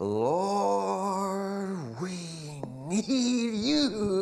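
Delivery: overdone, theatrical, very slow, high, drawn-out Lord. Showing the wrong way to pray aloud in front of others: overly dramatic prayer. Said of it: "overly dramatic".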